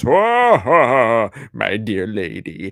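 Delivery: deep, booming, loud voice, spoken very slowly. Showing how Santa just sits around: John Call as Santa Claus impression. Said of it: "It's my John Call as Santa Claus impression".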